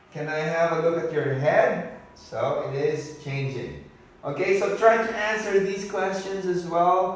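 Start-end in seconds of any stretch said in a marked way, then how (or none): 0.1-1.9 intonation rising on "head". Video lesson practicing question intonation; rising pitch at the end. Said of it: "This is can, of course, it's going up".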